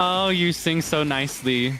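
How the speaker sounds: mock backhanded sweetness. Retelling two characters complimenting each other in a verse: imitating a shady voice. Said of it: "in a kinda shady voice".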